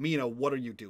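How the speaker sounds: sharp, scalding, cutting scolding tone. Narrating a scene, voicing Antares calling out to Mina: sharp scolding Antares voice. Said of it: "You hear the sharp tone of Antares say".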